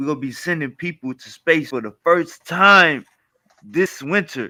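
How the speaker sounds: acted-out thrilled, upbeat, excited, eager delivery. Retelling a man's words from a video he was in, imitating an excited man. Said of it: "he sounded real exciting".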